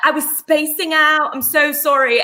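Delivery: put-on high, slow posh accent. Retelling how they spoke at school: imitating own posh accent. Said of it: "what I would now describe as a posh accent".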